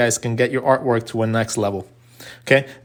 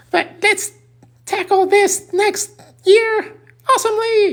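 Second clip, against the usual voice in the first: throat-straining put-on voice, pitched higher; 3 dB louder than usual. Introducing themselves as Officer Milky to say Happy New Year: Officer Milky voice. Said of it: "my throat does not allow me to talk like this much".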